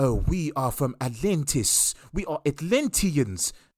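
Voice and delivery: slow, put-on almost South African accent. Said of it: "You sound almost South African saying it like that".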